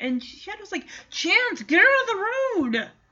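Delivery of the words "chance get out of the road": acted, sharp, high, urgent yell. Retelling a movie scene: imitating a yell. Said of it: "yelling at Chance".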